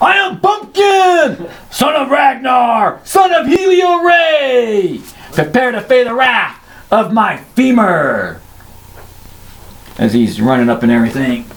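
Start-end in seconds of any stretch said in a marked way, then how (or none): 0.0-8.4 loud, high yell with "ray" stretched long. During a game, Bumpkin charges with his femur, yelling out loud. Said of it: "yelling out in a loud voice".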